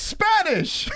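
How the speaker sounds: very high exclamation. Mocking a commentator's reaction to a Spanish speech: imitating Joe Rogan. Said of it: "Joe Rogan's like".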